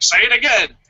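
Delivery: put-on bossy, insistent, demanding voice, pitched high. Guessing why a commentator repeats a line, imitating Vince yelling. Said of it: "Vince is yelling at him".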